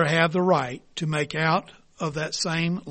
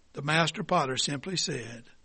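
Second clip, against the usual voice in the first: ordinary delivery, nothing marked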